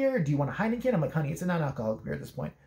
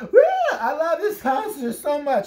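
very high, drawn-out, loud, tipsy gushing whoop; 9 semitones higher, 7 dB louder than usual. Retelling what a drunk girl at a concert said: imitating a drunk girl. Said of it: "It was a drunk girl".

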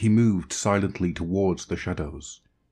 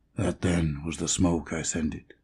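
muttering. A man answers a child who has just described her village, muttered. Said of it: "muttered the man".

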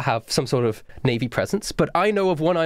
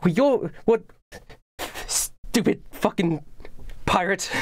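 high, flustered, thrown-off sputter; 6 semitones higher than usual. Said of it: "clearly flustered".

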